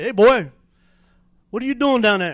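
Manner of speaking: big, loud voice calling out. Retelling a man catching him stealing cards, in a big voice. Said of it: "I hear a big voice behind me say".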